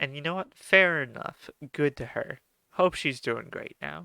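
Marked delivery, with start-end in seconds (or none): none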